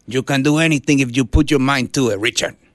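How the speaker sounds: put-on heavy, thick Puerto Rican accent. Quote your dad talking to you, Richard, in his thick Puerto Rican accent. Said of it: "in his, thick Puerto Rican accent".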